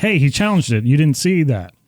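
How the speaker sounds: mock, acted-out coach yelling, arguing tone. Retelling how the coach yelled at the umpire: imitating a coach yelling. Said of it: "the coach has to yell at him and say".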